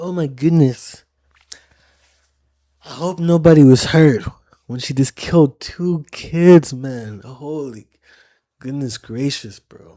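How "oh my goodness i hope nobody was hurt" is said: high, raised woman's voice. Pausing a video to retell what the woman just said: imitating the woman in the video. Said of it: "She's like".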